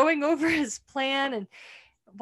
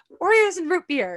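play-acted, adorably cute, high, sweet, coaxing voice; 5 semitones higher, 4 dB louder than usual. Retelling a sketch where a character answers the door: imitating a really cute delivery. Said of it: "in a really cute way".

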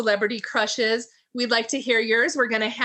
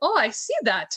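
put-on French accent. Retell a man's reply after Daryl apologised to him for a butt grabber, in a French accent. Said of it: "And that's my French accent".

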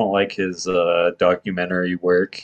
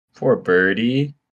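plain

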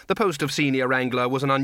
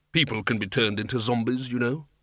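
plain reading voice

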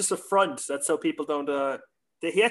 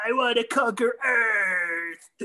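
slow, pitched-up whine, Earth stretched out; 7 semitones higher than usual. Retelling a cartoon episode where Shredder whines: whiny Shredder voice. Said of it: "that one episode where Shredder's whining".

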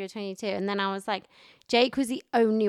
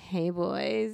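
mock-sexy put-on voice. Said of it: "do it again but sexy".

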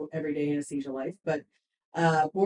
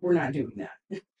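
firm, no-nonsense parental mom voice; 2 semitones lower than usual. Speaker talking about a group's shared goal switches to a mom voice. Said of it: "mom voice".

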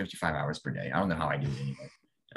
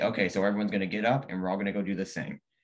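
usual speaking voice

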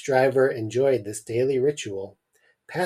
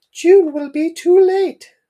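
shrill, loud mother character voice; 11 dB louder than usual. Reading a story aloud, the Mum answers the father, in a Mum character voice. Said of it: "I forgot I was doing a voice for the Mum".

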